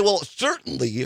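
ordinary talk, nothing marked

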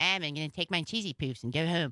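deep, very low put-on cartoon voice. A South Park fan gives in and repeats the line: Cartman voice. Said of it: "maybe I'll do a Cartman voice".

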